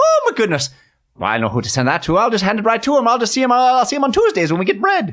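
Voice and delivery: put-on leprechaun accent. Speaker plays a villager receiving a vaguely addressed item, in a stage Irish leprechaun accent. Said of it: "you said in your leprechaun accent".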